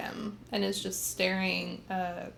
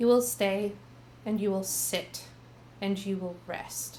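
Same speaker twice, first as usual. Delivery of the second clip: very commanding, firm, authoritative no-argument tone. A character tells her brother to stay and rest, commanding voice. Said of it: "with a very uh, commanding voice".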